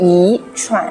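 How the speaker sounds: 一 said with rising second tone. Mandarin lesson on tone change: rising second tone on 一. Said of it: "shift the tone of 一, which means one, into second tone".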